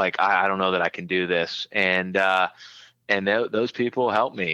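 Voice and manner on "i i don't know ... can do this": acted tearful, crying voice. Retelling talking to people at a meeting before prom: retelling words said crying.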